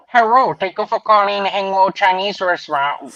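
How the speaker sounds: mock Chinese-accented order-taker voice. Playing a Chinese restaurant worker answering the phone: put-on Chinese restaurant phone worker voice. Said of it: "I always be like".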